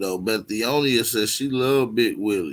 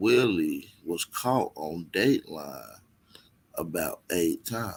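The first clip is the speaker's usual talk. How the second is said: very slow, drawn-out, spelled out word by word; 5 semitones lower, 5 dB quieter than usual. Speaker repeats a line for the listeners, very slow. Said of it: "I'm gonna say it real slow for y'all".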